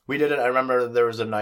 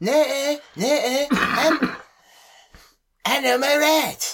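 put-on cartoon boy voice, higher pitch; 4 dB louder than usual. Acting out a customer returning chicken: Eric Cartman impression. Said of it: "do your best little Eric Cartman impression".

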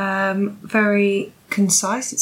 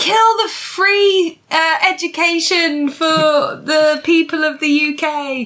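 very slow, loud, high shout; 8 semitones higher, 5 dB louder than usual. Retelling an invented story of Jacob Rees-Mogg on a bulldozer: imitating Jacob Rees-Mogg shouting. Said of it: "standing on the top of the bulldozer just shouting".

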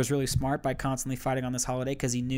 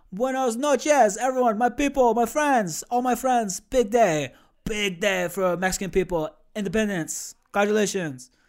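put-on Kazakh accent, pitched up; 8 semitones higher, 4 dB louder than usual. Speaker imitating a man everyone finds charming, Kazakh accent impression. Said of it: "in a Kazakh accent".

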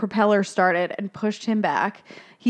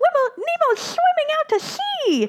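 put-on very high, squealing child voice. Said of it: "as one of the students goes".

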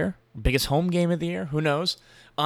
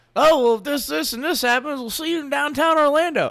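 worst-ever very high, bad commentator voice; 11 semitones higher, 3 dB louder than usual. Retelling what Lee Corso said on TV, worst Lee Corso impression. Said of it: "That was the worst impression ever".

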